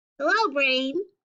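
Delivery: high-pitched put-on character voice. Reading a graphic novel aloud, voicing Chick: high-pitched Chick voice. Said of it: "Chick will be my high-pitched voice".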